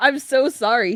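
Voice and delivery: shy, high voice. Reading a male character's line in a story, in a shy voice. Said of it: "he said in a shy voice".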